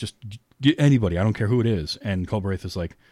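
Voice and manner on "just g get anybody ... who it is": put-on pleading voice. Retelling a scene of asking for a surgeon: imitating someone pleading. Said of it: "he's pleading with him to send a surgeon".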